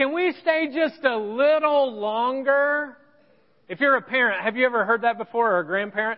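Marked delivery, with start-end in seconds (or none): 0.0-3.0 put-on high, slow pleading kid voice. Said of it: "they started saying this".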